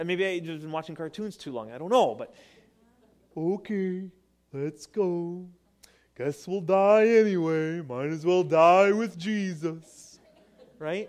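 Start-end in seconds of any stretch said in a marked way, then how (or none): 2.1-10.2 slow, drawn-out cartoon donkey voice. Speaker voices Thomas's words as he hears them in his head: Eeyore voice. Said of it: "like in the voice of Eeyore in my head".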